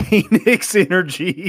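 high, loud shouting yell. Retelling how a TV announcer yelled a catchphrase: imitating Desmond Howard yelling. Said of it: "Desmond Howard yelling".

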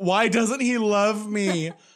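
shrill, loud scream. Retelling what the speaker screamed to everyone there, retelling own scream. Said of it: "And I basically screamed".

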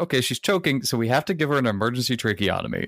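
ordinary talk, nothing marked

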